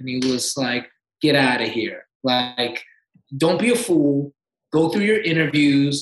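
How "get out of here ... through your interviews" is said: put-on sassy tone. Retelling the agent's reply about money: imitating a sassy agent. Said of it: "my agent's very sassy".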